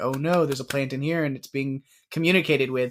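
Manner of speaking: plain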